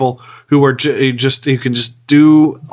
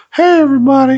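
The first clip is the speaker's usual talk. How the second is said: very high-pitched, goofy bear voice; 12 semitones higher than usual. Imagining the actor playing a bear arriving on set, in a high-pitched voice. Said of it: "like high pitched voice".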